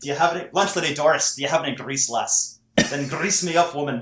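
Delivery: put-on Scottish accent. Showing the only impression the speaker knows, Groundskeeper Willie Scottish accent. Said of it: "accurate Scottish accent".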